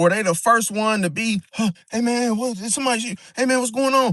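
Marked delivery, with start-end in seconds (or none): 1.5-4.1 suddenly afraid, high, frightened, spooked voice. Imitating a fake tough guy when trouble starts: imitating someone getting afraid. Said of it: "getting all afraid and shit".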